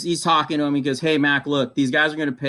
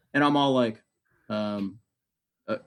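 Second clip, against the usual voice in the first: usual speaking voice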